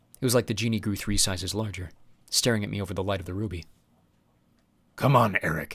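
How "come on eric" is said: low, gruff, growling voice. Reading a story, voicing a genie urging eric: growling. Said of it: "it growled".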